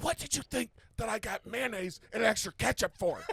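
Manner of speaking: whisper-shouting, very high. Retelling a line said to her in a movie theater: retelling own whisper-yelling. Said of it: "I'm whisper yelling at her 'cause we're in a movie theater".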